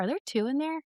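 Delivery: very quiet, hushed, wondering tone, slightly high. Retelling a taped moment when her husband asked a question: imitating husband speaking quietly. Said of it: "very quietly, you hear my husband go".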